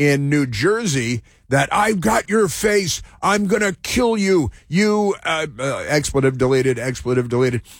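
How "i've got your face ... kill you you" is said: mock high-pitched screaming with a menacing tone. Retelling a threat a man screamed at an ice agent: imitating a man screaming. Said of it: "this guy screaming at an ice agent".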